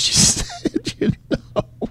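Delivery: high voice, laughing through the words.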